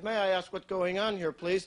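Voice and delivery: ordinary talk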